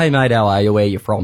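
usual speaking voice

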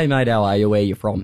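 ordinary delivery

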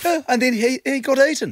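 fake New Zealand accent. Recounting a story in conversation: put-on Kiwi accent. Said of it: "You put on a Kiwi accent for that".

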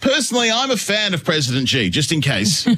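big, loud, high voice. Retelling what they said in the car, in case anyone was listening: big loud voice. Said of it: "I said in a big loud voice".

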